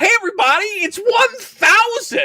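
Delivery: very high, loud, drawn-out, excited cheer. Suggesting a joke word balloon for a comic cover character: imitating an excited comic character. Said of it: "really excited about it".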